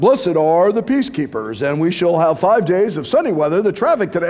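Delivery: very low, deep radio announcer voice. Describing a recorded Jesus story, doing Jesus in a radio announcer voice. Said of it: "he started off like a radio voice".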